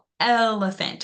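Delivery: overpronounced, stressed opening el in elephant. Asking a class about word stress, elephant with stress on first syllable el. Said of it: "We right away overpronounce that L in the beginning".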